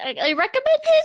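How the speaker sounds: voice cracking. Speaker giving a recommendation when the voice suddenly cracks, voice cracking. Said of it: "I don't know why my voice just cracked".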